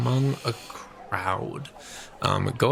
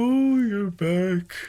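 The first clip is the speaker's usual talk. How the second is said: very high voice spoken through a yawn; 10 semitones higher, 4 dB louder than usual. A voice greets the players as they come into the inn, yawning. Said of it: "you hear the yawning voice of".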